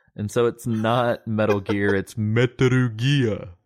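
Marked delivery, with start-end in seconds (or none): 2.0-3.4 announcer voice, Metaru said with ru ending. Co-host shows how they say Japanese words, deep TV announcer voice. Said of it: "I go into like TV announcer voice".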